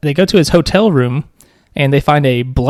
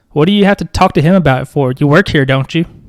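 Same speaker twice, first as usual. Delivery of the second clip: mock pushy, manipulative, entitled, demanding tone. Speaker retells what a guy said to a worker, imitating an entitled demand. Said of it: "That's like Karen energy".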